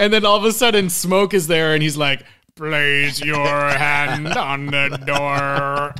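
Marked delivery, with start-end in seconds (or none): 2.6-5.9 very slow, deliberate robotic cyborg voice. Describing a movie scene, quoting the cyborg's first line: imitating a movie cyborg. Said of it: "he sounds like Emilio".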